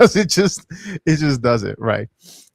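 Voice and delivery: words broken up by laughter. Explaining why a price will keep falling, laughing while talking. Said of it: "I don't know why I'm laughing".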